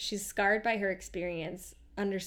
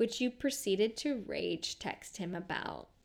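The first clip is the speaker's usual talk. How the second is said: slow, put-on, patronising, condescending tone. Acting out what a woman said to the listener: mock-condescending tone. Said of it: "She's like just being so condescending with her tone".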